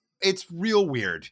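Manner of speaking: plain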